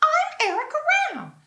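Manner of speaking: loud cartoon voice, going very high and swooping. Showing the cartoon voice used for a past role: Erica Ram cartoon voice. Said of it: "and she's very".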